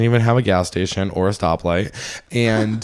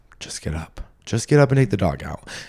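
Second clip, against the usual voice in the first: sneaky, sneaking little voice. Speaker retelling her six-thirty reluctance, voicing the little voice behind her, sneaky little voice. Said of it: "this sneaking little voice behind me goes".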